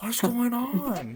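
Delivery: pitched way up, movie-star voice. Describing an actor's facial expressions: Owen Wilson impression. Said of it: "where he's like".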